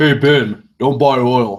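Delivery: put-on not-so-girly speaking voice. Addressing Ben by name, trying out a not-so-girly voice. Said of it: "in my not so girly voice".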